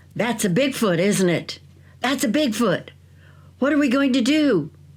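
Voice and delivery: terrified, frantic man's voice, high and panicked. Storyteller quotes a terrified british gentleman at night, retelling a panicked man. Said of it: "said in a panicked voice".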